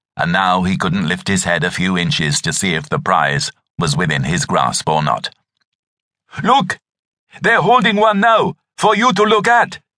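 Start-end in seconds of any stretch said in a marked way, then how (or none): 6.5-9.8 calling out louder, very high-pitched. Kalume calls out again to Andre, who hasn't looked up, calling out louder. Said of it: "Kalume called out louder".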